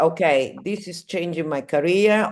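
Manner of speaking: plain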